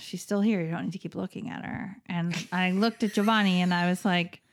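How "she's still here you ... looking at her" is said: put-on mutter under breath, quieter and faster. Retelling a remark about a woman who kept looking over, muttered under breath. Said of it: "I said kind of under my breath".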